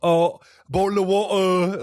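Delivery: put-on loud, shrill, drawn-out, overdone British accent. Retelling how a character mocks another's accent to his face: mocking British accent. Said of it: "constantly mocks his accent to his face".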